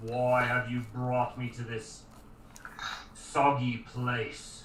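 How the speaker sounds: deep, rumbling voice of a living rock creature. Voicing a creature of shifting rock as it looks around, rumbling rock-creature voice. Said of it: "in a rumbling voice".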